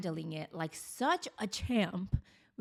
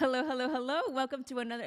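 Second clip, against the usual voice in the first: voice cracks and breaks, pitched high; 5 semitones higher than usual. Opening the Mindset Mic show with a greeting, voice cracking. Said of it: "Did you hear that voice crack?".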